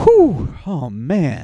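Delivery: put-on dramatic groaning and exaggerated sighs. Retelling sounds a stranger made in a bathroom stall: imitating dramatic groaning. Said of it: "he would take a beat, you know, for dramatic effect".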